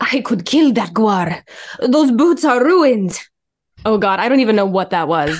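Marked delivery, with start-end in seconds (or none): 0.0-3.2 put-on Eastern European accent. Trying again to voice a requested style: Eastern European Ashlander accent. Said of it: "In the following style or accent of Ashlander, Eastern European".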